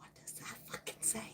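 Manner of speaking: very quiet, barely voiced, breathy whisper. Asking another speaker privately how to say a label: whispering. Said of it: "I'm gonna whisper in Heidi's ear".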